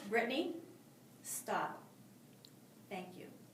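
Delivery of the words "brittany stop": firm, steady, very quiet near-whisper. Role-playing a teacher stopping a student, firm, a little quieter. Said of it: "The tone was firm, the volume was a little lower".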